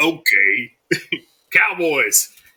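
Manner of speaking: put-on gruff, deep voice. Remembering a late friend, quoting what he always said, in a gruff, deep voice. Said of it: "this real gruff, deep, gruff voice".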